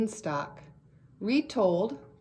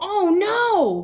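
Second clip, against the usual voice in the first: very high, very loud, long worried "no"; 10 semitones higher, 8 dB louder than usual. Reading a story aloud, showing how Jack would say it when worried. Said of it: "Or would you say".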